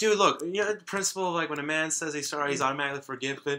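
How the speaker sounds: worked-up angry rant. Retelling a movie scene to a listener, acting out a character's mock-angry pissed-off rant. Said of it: "He's all pissed off".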